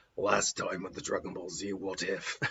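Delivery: deep, low, sultry put-on voice. Narrating a show's recap intro, in a Geralt voice. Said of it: "I can do a pretty good Geralt from Witcher now".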